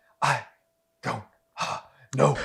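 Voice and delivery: put-on breathless, faltering voice. Mocking how an actor talks in a film: imitating Kiefer Sutherland's gasping speech. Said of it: "I don't know why Kiefer Sutherland does that".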